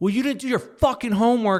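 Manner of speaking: mock furious, high-pitched screaming rant. Retelling what a mother said to her daughter, imitating a screaming mom. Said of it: "and like screaming".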